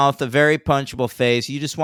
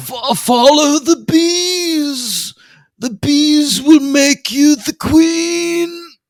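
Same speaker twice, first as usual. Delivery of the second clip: very high, loud movie-villain voice, bees stretched; 13 semitones higher, 7 dB louder than usual. Speaker imitating the voice an actor uses as a movie villain. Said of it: "he insists on doing this voice the whole time".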